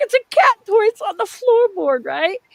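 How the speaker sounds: high crying voice, words pushed out through tears. Retelling answering police officers searching the car, imitating own past crying. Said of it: "and now I'm crying".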